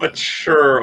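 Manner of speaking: "mature" strongly stressed. Recalling a reaction to news of Jackass four coming out, stressing 'mature'. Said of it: "Emphasis on the word mature".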